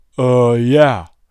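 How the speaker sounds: low, deep man's voice. Retelling a random guy outside the tent answering, imitating a deep-voiced guy. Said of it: "some random guy with a deep voice goes".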